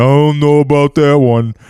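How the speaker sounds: very loud, slow, deliberate, big put-on voice. Repeating a line as an impression of Ian: Ian impression. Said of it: "That's my best Ian".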